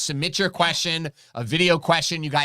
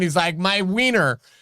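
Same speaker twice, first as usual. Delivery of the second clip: ordinary talk, nothing marked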